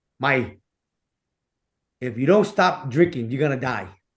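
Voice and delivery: mock solemn, grave, dead-serious voice. Retelling a warning given to a drinking dad: imitating a serious voice. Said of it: "in a whole serious voice".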